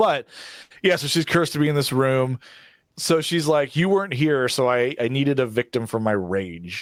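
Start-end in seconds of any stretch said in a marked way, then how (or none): none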